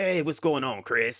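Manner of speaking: put-on gravelly voice. Recounting meeting a streamer in person, speaker quotes his greeting: imitating Smoke's gravelly voice. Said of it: "that little gravelly kind of voice".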